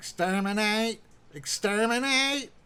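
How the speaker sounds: high-pitched robotic voice. Speaker tries a voice trick with a finger on the Adam's apple, Dalek voice. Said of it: "a robotic voice almost".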